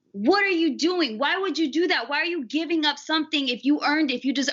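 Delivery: normal talking voice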